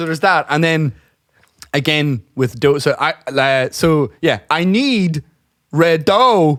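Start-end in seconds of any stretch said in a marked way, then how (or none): 4.5-6.6 slow, drawn out, odd off-beat emphasis on wrong words. Play Christopher Walken working in Domino's, asking for dough, in a Christopher Walken impression. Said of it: "That's a Christopher Walken".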